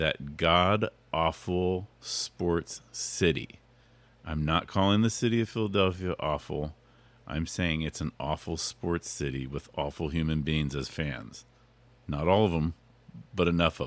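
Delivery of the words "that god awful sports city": very slow, careful, deliberately weighed words. Previewing Sunday's game against the Eagles, said very carefully. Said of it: "I'm going to say it very carefully".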